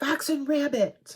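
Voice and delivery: put-on Australian accent. Reviewing fabrics in a Flosstube video, naming a fabric dyer in a mock Australian accent. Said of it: "No more Australian accent".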